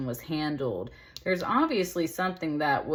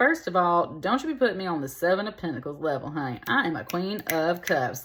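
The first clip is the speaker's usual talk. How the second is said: ordinary delivery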